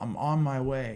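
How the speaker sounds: put-on very slow, stretched-out, drawn-out holler. Retelling running down the balconies to the stage: imitating someone yelling. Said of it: "and I yelled".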